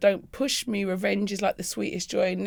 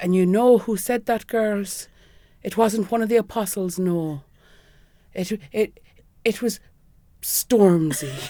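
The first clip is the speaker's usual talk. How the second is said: cute little put-on Irish accent, slow; 3 dB louder than usual. Retelling a speaker addressing the girls at school, imitating his Irish accent. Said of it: "him just in that sort of cute little in Irish accent".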